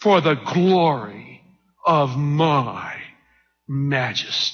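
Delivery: very slow, low delivery, every word drawn out. Reading a verse, acting out how he must have said it: said slowly. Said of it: "I'll say it slow like he must have said".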